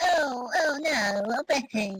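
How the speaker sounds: very slow, drawn-out comedy character voice, every word dragged. Doing a quick impression after saying he talks like Frank Spencer. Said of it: "I talk like Frank Spencer".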